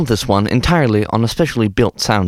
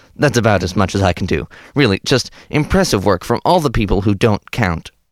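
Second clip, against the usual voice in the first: ordinary talk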